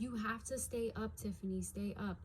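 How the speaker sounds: ordinary talk, nothing marked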